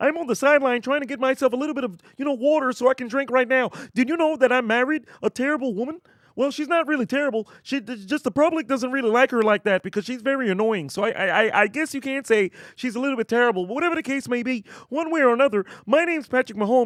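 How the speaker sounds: high voice like a little puppet frog. Doing a requested impression for a viewer: Patrick Mahomes as Kermit the Frog. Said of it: "hit us with a Patrick Kermit the Frog Mahomes".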